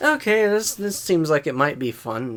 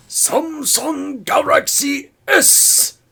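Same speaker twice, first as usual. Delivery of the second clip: put-on Japanese accent in a very high voice; 13 semitones higher, 4 dB louder than usual. Retelling how a Korean man said it: put-on Japanese accent. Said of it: "said it in a Japanese accent".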